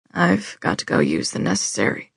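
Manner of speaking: very low grumbling muttered under the breath. Narrator reading a man's line as the children watch him, grumbling. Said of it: "he grumbled".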